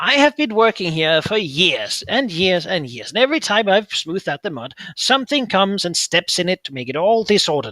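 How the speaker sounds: loud voice of a tiny creature. Narrating a scene, the speaker voices a little creature poking its head from mud: little creature voice. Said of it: "as you hear a little voice say".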